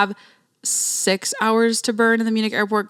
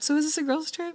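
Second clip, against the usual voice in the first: smooth, flirtatious, charming, soft and high; 7 semitones higher, 7 dB quieter than usual. Retelling what a man said to her about her trip, put-on smooth voice. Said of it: "Voice change, like giving smooth".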